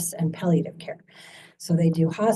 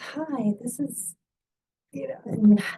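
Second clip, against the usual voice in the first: put-on calm professional voice, quieter; 5 semitones higher, 3 dB quieter than usual. Telling how a woman answered the speaker's call, imitating her phone work voice. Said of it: "work voice".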